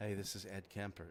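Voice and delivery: deep, hushed giant's voice. Retelling a phone call, the speaker mimics the man answering: Ed Kemper voice. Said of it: "making him sound like that because he's seven foot tall".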